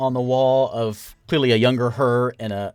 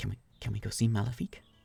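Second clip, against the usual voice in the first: hushed, very quiet, barely-there whisper; 11 dB quieter than usual. The narrator voices a tense companion who grips tighter and whispers his question again. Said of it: "he whispers again".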